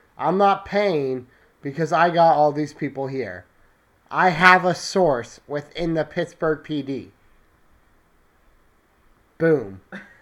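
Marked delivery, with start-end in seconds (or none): none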